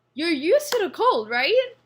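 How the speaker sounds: high-pitched, loud, mocking tone.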